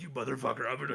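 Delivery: put-on muttering under breath. Retelling what he said under his breath, imitating muttering. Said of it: "it just under his breath".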